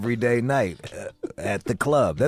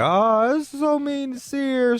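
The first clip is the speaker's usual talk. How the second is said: put-on very high, pitying, sympathetic girl voice; 13 semitones higher than usual. Mocking girls who feel bad for sear, in a mock-pitying girl voice. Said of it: "they feel bad for Sear".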